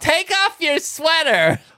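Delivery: very high, loud, exaggerated flamboyant voice.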